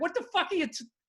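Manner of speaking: words broken up by laughter. Recalling reacting to a feminist speaker, retelling laughing while talking. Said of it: "And I just started laughing".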